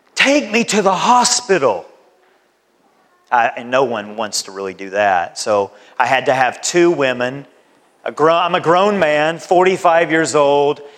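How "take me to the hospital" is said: anguished, pained outcry of agony. A grown man recalling a painful moment, retelling crying out in pain. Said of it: "I literally cried out in pain".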